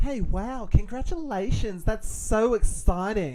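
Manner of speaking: put-on high, loud girly voice. Acting out a woman's text reply to a man's message, girly voice. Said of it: "Can you be the girl voice?".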